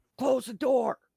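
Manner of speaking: shrill, very high, very loud gnome scream. Narrating a zombie fight, the storyteller voices the gnome: screaming gnome. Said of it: "And the gnome screams".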